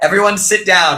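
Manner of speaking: ordinary delivery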